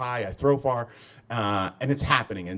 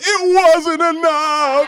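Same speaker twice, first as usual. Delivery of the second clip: put-on wailing cry, very high and very loud; 11 dB louder than usual. Retelling how a friend told the story, imitating a wail. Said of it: "she told everyone that I crossed the line and just wailed".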